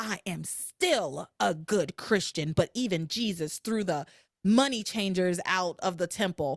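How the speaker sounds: put-on angry, pissed-off voice. Retelling an argument, voicing Liz's mock-angry retort. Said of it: "Liz is pissed".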